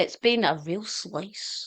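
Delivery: very English accent, slow, unhurried phrasing. Thanking the others at the end of the episode: very English way of speaking. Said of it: "I said that very English".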